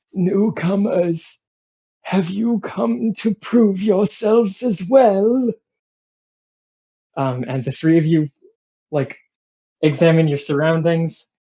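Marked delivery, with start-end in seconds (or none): 0.2-5.5 crackling whisper, much higher. A storyteller voices a figure on a carriage greeting the newcomers, in a crackling whisper. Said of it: "whispers to you in a in a crackling voice".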